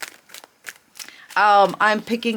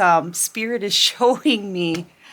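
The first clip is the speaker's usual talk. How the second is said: breaking into a giggle mid-phrase while talking. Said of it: "I'm already kinda laughing".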